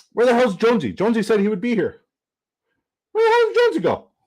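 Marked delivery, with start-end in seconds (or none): 3.2-4.0 voice shooting way up, very high-pitched. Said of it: "Wow, my voice just went up there".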